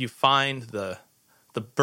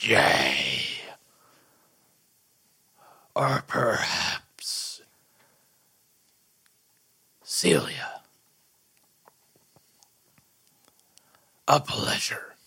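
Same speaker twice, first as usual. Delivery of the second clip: hushed, husky whisper, lower pitch; 6 semitones lower than usual. Voicing a character greeting a player at a table: husky whisper. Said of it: "And in a husky whisper".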